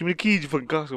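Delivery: words rattled off, tumbling out at speed. Retelling what the last guy said, the speaker repeats it: retelling a really fast line. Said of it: "he says really fast".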